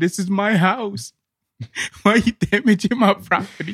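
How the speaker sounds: put-on high-pitched, yelled, screamed protesting tone. Retelling how a homeless guy reacted to protesters: imitating someone screaming. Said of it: "a homeless guy was screaming".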